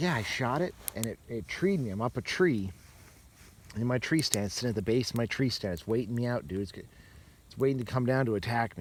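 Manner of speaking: ordinary delivery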